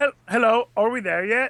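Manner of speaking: put-on English gentleman accent. Re-enacting a moment from a show before it goes to commercial, in a Ben Kingsley impression. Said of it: "Did you just do him as an English guy?".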